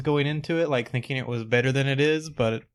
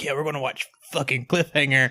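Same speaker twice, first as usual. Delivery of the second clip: imitated child's voice, go-to kid voice. Recalling his stepmom's step-nephew at Thanksgiving, imitating a kid's voice. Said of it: "my go-to voice for like children".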